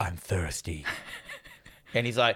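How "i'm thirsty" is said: very low, soft, deep, husky, throaty voice. Speaker describes an actress's performance, imitating a husky voice. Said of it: "She has a husk of a voice".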